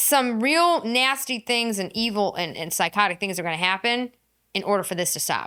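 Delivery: normal talking voice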